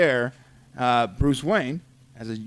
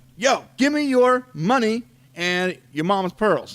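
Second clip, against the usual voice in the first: high-pitched, tough street-mugger voice; 7 semitones higher than usual. Retelling a story of a family accosted outside a theater: mugger voice. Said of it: "is that what he sounded like?".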